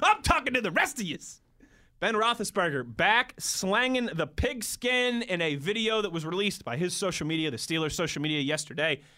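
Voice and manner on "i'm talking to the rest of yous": pitched-up, preachy sports pundit voice. Addressing viewers who missed the video: Stephen A. Smith impression. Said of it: "to do my best Stephen A impersonation".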